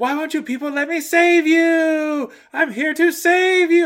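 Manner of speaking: very high, very loud, drawn-out dramatic screaming. Describing a big dramatic scene, the speaker imitates the character screaming. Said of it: "he just starts screaming".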